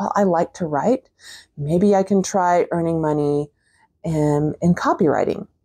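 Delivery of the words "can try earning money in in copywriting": ordinary talk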